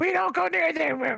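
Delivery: very high kobold creature voice. Game master voicing a kobold answering the players' question, in a kobold voice. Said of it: "It's a kobold voice".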